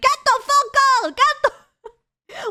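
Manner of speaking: shrill, very high, very loud, stretched-out screaming. Retelling how people in a video reacted: imitating someone screaming. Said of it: "they start screaming like".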